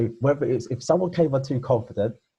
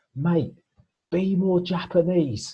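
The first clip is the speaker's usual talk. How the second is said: mock, very slow, high, drawn-out heckler shout; 7 semitones higher than usual. Retelling what someone in the comedy crowd shouted: imitating a heckler shouting. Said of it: "someone just shouts".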